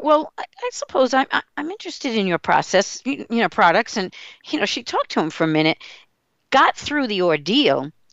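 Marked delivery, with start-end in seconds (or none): 0.0-4.0 mock stammering delivery. Retelling how a woman answered a seller, imitating her stammering. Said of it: "So she stammered out".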